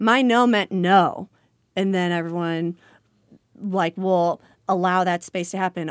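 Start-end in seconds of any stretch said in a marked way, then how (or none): 0.0-1.3 very loud and much slower. An educator recalls a student at the lunchroom table: quoting a student very loudly. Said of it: "very loudly say".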